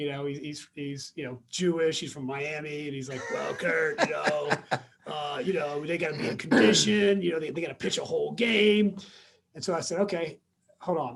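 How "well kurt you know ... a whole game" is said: put-on rough-voiced old-school coach voice. Retelling what a cigar-smoking man in the dugout told him, rough voice. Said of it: "he's got this rough voice".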